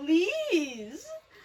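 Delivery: voice breaking, with please drawn out. Pleading for a dream match in the main event: voice crack.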